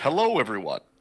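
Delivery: smooth, polished, professional announcer voice. Testing the microphone after being hard to hear: professional voice. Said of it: "try to use my professional voice".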